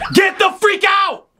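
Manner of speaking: yelling at top of lungs. Opening a video with a greeting at night, yelling at top of lungs. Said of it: "I don't know why I'm yelling at the top of my lungs".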